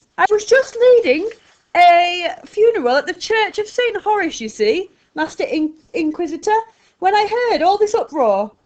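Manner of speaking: very loud, shrill, eager chatter. Narrating a story, the old preacher speaks to the Inquisitor in a shrill, eager voice. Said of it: "talking eagerly in a shrill voice".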